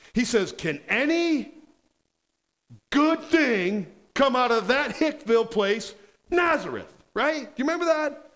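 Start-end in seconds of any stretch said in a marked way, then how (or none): 0.6-7.0 biting, scornful, deriding mocking tone. Retelling what Nathaniel said, mimicking his mocking tone. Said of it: "He's mocking".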